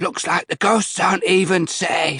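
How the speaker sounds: rasping voice, close-miked. Narrator reading a voice that rasps in the narrator's ear, raspy voice. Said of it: "a voice rasped in my ear".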